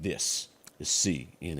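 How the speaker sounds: deep, unhurried announcer voice.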